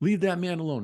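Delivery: mock, high, shrill scolding scream. Telling about a woman who came out and screamed at a kid; retelling a woman screaming. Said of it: "she starts screaming at the kid".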